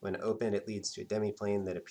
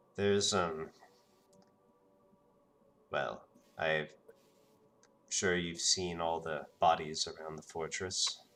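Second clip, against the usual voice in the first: low, voiced undertone; 4 semitones lower than usual. Narrator voicing Dom speaking to Colleen: low voice, not a whisper. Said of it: "says in kind of a, a a low voice, but not a whisper".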